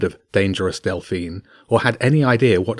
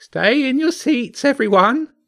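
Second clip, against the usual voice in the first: put-on very high, creaky, slow elderly voice. Reading a story aloud, voicing the driver calling to the children: creaky old voice. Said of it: "the driver's creaky old voice called out".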